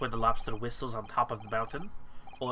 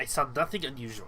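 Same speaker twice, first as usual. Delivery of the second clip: put-on Russian accent in English. A character questioned about the night watch answers, russian accent. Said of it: "the more I forget what Russian accent is".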